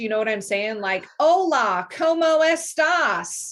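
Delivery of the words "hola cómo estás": loud, high, strongly anglicized non-native Spanish accent. Imitating a non-native speaker greeting in Spanish: non-native Spanish accent.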